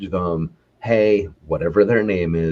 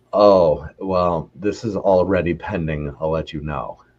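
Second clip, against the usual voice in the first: mock let-down, deflated, drawn-out disappointed reply. Retelling how sellers reply to a serious buyer: imitating a disappointed seller. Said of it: "hear the disappointment in their voice".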